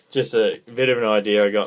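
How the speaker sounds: ordinary talk, nothing marked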